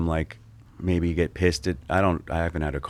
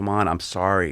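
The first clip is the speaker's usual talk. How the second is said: put-on scared, frightened pleading tone. Retelling pleading with a man holding a pistol: imitating own scared plea. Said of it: "I was, like, scared".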